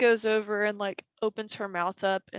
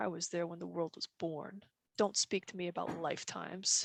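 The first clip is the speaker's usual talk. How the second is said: very quiet, ridiculously deep, hushed, cavernous rumble; 2 semitones lower, 9 dB quieter than usual. Narrating a story, voicing a character; ridiculously deep voice. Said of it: "his voice gets like ridiculously deep".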